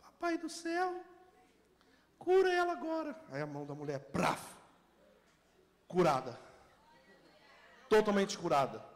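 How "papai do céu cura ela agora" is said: put-on tiny, thin, piping little girl's voice, very high. Retelling a healing, voicing the little girl who prayed: thin little girl's voice. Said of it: "uma voz fininha".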